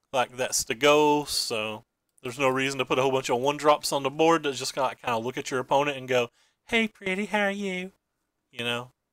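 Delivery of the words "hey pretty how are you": sugary, cutesy cartoon teddy-bear sweetness. Describing cards on the board greeting the opponent: Care Bear voice. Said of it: "I talk like I'm a Care Bear".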